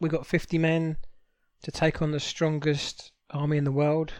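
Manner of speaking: plain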